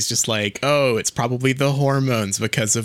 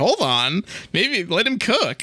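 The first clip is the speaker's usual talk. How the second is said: eager, delighted, excited high swooping voice; 7 semitones higher than usual. Retelling a film scene where the heroine watches a rescue kiss: imitating Katniss sounding excited. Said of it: "she's kind of excited about this".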